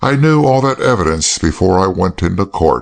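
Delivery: plain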